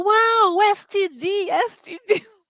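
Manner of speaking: high, drawn-out, stretched holler. Retelling a cartoon scene where Homer shouts mid-test: imitating Homer Simpson yelling. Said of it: "ele começa a gritar no meio da prova".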